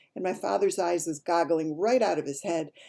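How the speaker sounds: ordinary delivery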